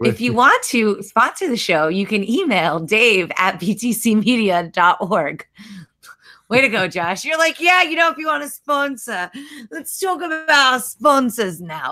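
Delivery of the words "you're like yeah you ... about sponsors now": messy, put-on Australian accent, pitched up. Teasing a co-host about a sponsor mention on the show, imitating Josh in an Australian accent. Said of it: "I love that Australian accent that you got right".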